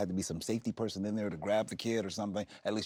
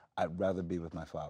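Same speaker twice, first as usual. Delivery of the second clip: ordinary talk, nothing marked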